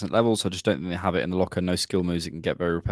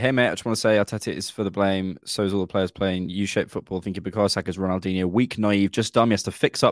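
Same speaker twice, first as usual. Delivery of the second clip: ordinary talk, nothing marked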